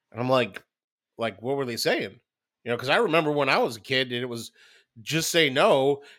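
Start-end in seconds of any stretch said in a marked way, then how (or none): none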